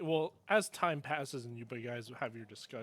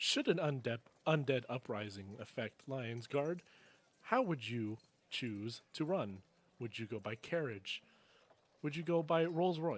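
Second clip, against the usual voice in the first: little polite, stiff, scripted-sounding robot voice. A game master voices a little robot polling townsfolk, in little survey robot voice. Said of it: "You just see little robots. / Thank you for answering this survey on undead uprisings".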